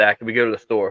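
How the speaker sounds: ordinary delivery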